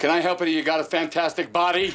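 furious, very high, shrill, very loud yell. He compliments her body, delivering it as an angry compliment. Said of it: "the tone of voice is like so angry".

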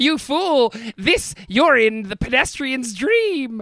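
high, slow, mocking, gloating arcade-machine laugh-voice. Retelling a dream inside a giant pinball machine, imitating a laughing arcade voice. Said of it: "I can hear the laughing voice of arcade".

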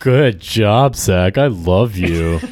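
put-on sarcastic delivery. Speaker repeats what he said to Zach, retelling a sarcastic remark. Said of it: "he said it really sarcastically".

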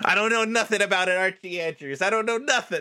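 very high, scared, timid little hobbit voice. Voicing a little hobbit pinned against a wall who won't talk: little hobbit character voice. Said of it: "this little hobbit is like".

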